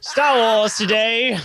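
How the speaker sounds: put-on slurred speech. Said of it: "slurring the word a little bit".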